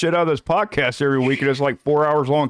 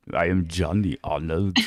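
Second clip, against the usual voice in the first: put-on Austrian accent, lower and quieter; 9 semitones lower, 5 dB quieter than usual. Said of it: "in his accent".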